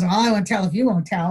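normal talking voice

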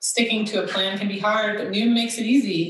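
plain

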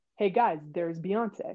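put-on, very calm, relaxed delivery. Retelling own remark to teammates, imitating own super calm voice. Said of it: "I'm, like, super calm".

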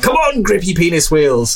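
mock high-pitched hollered yell. Describing a car video, the speaker retells a man yelling when stuck in mud. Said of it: "he just yells out of the car".

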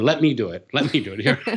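put-on screaming toddler voice. Retelling a story from childhood, imitating a screaming toddler. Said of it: "I'd be screaming".

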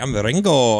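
put-on British voice, slight Spanish accent. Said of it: "Spanish, he'd be like".

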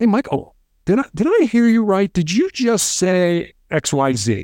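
relaxed, inquisitive, soothing and calming tone. Demonstrating how to question Michael in a conversation; curious, calming voice. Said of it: "a curious voice, a calming voice, a relaxed voice".

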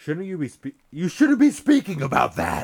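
very loud, high, alarmed yell with swooping pitch. Reading a story aloud, a grandmother scolding a question: disturbed yell. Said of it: "with an almost disturbed yell in her voice".

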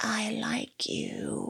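tiny, high, rasping, creaky voice-box voice. Imitating a possessed actress from a trailer: imitating a little creepy voice. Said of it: "I love her little voice in that moment".

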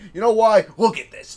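loud, high-pitched, indignant ranting delivery.

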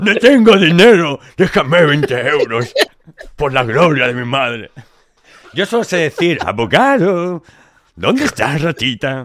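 grand, loud, high, declaiming orator's voice. Practising a voice bit, in an orator voice. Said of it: "con la voz de orador".

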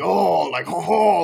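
stock gravelly French accent. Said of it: "the weird French, like, gravelly".

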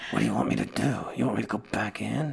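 gruff, low, quiet, rough, hushed movie tough-guy mutter. Describing a movie, acting out how its lead character talked: Snake Plissken impression. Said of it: "He talked like this".

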